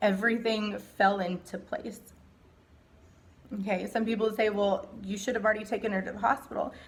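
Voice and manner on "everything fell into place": tearful voice, speaking through tears. Telling listeners about the day they got her to the hospital, crying. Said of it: "I'm crying".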